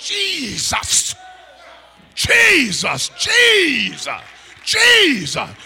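fervent, full-voiced, high, swooping holler. The speaker shows how believers call out when they don't care how they sound: hollering. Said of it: "You holler".

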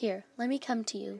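ordinary delivery

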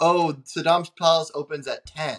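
plain

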